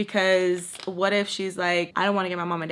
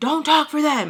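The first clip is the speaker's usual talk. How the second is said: acted angry yelling, higher pitch; 9 semitones higher, 4 dB louder than usual. Retelling how an officer spoke to a relative: retelling a yell. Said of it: "yelling at Baltimore".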